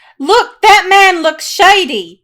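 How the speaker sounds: very loud, high, pointed call-out. In a role-play, right above a group having a hushed talk, speaking to Bramble, very loud. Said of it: "very loudly say to Bramble".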